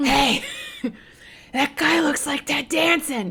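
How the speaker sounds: put-on drunken, loud stage whisper. Retelling spotting someone in a bar while drunk: imitating a loud drunk whisper. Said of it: "I drunk whispered, you know, the loud".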